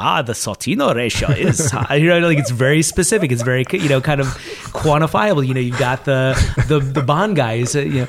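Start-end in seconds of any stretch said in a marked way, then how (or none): 0.0-1.7 slow, put-on German accent. Describing people at an endowment meeting, imitating a Germanic hedge fund person. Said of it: "Germanic hedge fund person who speaks".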